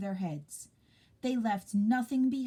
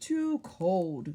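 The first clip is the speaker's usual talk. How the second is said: cold, grumbling lizard voice. A narrator reads the lizard's reply in a story, grumbling. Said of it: "grumbled the lizard".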